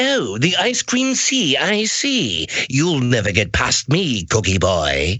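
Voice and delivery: swooping, taunting cartoon bad-guy villain voice. Asked about voices in Candyland, recalling the bad guy: Lord Licorice voice. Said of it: "he'd speak like that".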